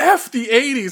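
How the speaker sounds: very high, loud, shrill indignant outburst. Recalling a character's line from the very beginning; mock-indignant outburst. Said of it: "he gets all indignant and he's like".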